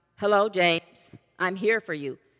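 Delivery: deep, dropped, booming voice as if from above. Telling a joke, the speaker voices God answering a man hanging from a cliff: thunderous God voice. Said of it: "his thunderous voice came down".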